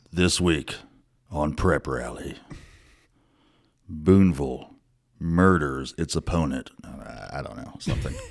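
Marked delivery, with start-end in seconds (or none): 0.2-6.7 dramatic, mysterious true-crime podcast narration voice. Podcast host jokes about a weekly theme, in a crime podcast voice. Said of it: "like it's a crime podcast".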